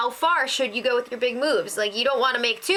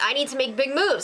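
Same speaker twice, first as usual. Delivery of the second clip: ordinary delivery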